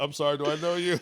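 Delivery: high, soft, feigned manner. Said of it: "acting like I didn't know him".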